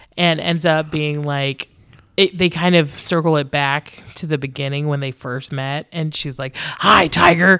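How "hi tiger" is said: big, loud put-on storybook monster voice. Recounting a scene where she greets him again, in a monster voice. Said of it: "but in like a monster voice".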